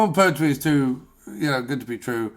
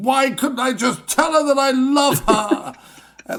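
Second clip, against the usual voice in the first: put-on very high, theatrical, old-time stage lover voice; 12 semitones higher than usual. Acting out a flustered lover in a 1930s Noel Coward play. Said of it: "goes downstairs and goes".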